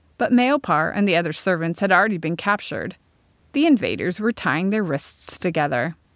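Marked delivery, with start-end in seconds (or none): none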